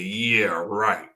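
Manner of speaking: laughing, cracking up in disbelief, dismissive. Retelling a reply to a voice heard in a parking lot: imitating own laughing reply. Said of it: "I crack up laughing".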